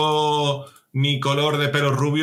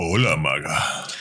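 sexy, sultry superhero character voice. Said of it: "esa voz tan sexy de superhéroe".

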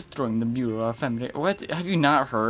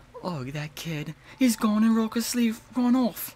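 put-on very high-pitched voice with British accent; 10 semitones higher than usual. Voicing a character while switching voices, in a british accent. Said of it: "Why did I start speaking in a British accent?".

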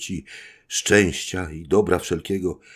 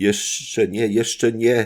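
calling out, crying out, higher; 4 semitones higher than usual. Edmund answers the dying Faria's farewell, calling out. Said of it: "zawołał Edmund".

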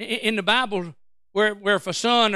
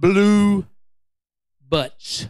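slow, loud, deliberate delivery, "Blue" drawn out; 5 dB louder than usual. A fast talker slows down to repeat a phrase for his audience, slow and deliberate. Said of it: "Let me slow down since I talk fast".

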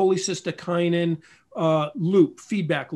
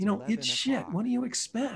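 higher, quieter whisper; 6 semitones higher, 6 dB quieter than usual. Retelling what a doctor said, leaning in close to the ear: imitating a doctor's whisper. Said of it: "he whispers".

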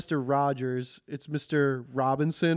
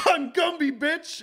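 very high-pitched, nasty, mean cartoon voice; 12 semitones higher than usual. Speaker recalling a comedian's Gumby sketch, mock-mean Gumby voice. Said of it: "he kind of sounded like the soup Nazi".

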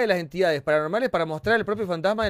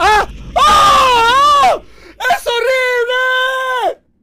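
very high, very loud, drawn-out frightened scream; 12 dB louder than usual. Playing a game on stream with others, suddenly startled, yelling in fright. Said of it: "¡No grites!".

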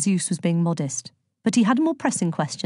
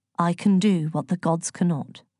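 plain reading voice

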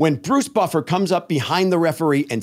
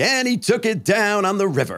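announcer voice, called out with full showman delivery; 4 semitones higher than usual. Retelling a poker-table line: Bruce Buffer announcer voice. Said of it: "he's doing his voice".

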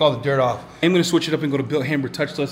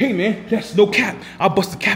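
street slang voice, pitched up; 6 semitones higher than usual.

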